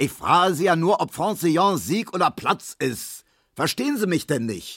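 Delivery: high, impatient, exasperated shout. Narrator reads Herr Markowski's line to Emil Kubinke: shouted. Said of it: "schrie der".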